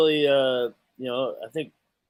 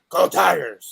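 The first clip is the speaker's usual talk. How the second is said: put-on loud call in Cajun accent; 3 semitones higher, 6 dB louder than usual. Speaker recalls what Orgeron would always say, imitating Orgeron's 'Go Tigers'. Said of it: "just like he'd always say".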